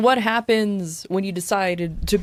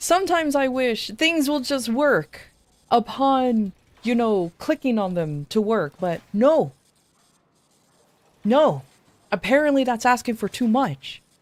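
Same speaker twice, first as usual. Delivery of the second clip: angry, fed-up, properly annoyed ranting tone; 4 semitones higher than usual. Complaining to the guys about constant technical difficulties, angry. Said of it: "I am so angry right now".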